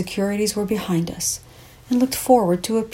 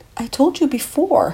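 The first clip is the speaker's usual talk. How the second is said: defensive, justifying tone, pitched up; 5 semitones higher than usual. The narrator interjects after a man complains of never getting a call; defensive. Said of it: "I interjected defensively".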